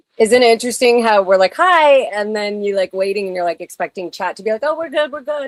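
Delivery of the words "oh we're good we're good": tiny, high, toy-like little voice. Imitating the chat answering a greeting: imitating chat's little voices. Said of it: "little voices coming out".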